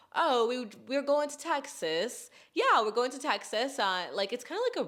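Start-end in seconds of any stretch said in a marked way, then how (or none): 0.1-3.7 put-on Australian accent, pitched up. Describing how Australians talk, imitating them in an Australian accent. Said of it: "And they talk like this".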